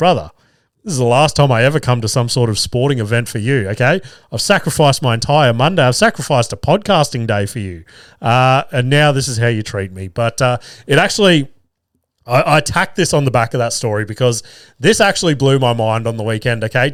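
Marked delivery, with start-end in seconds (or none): none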